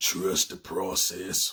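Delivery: deep, low put-on voice. Quoting a saying about patience the way T. D. Jakes said it: T. D. Jakes voice. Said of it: "that's my T D Jakes voice".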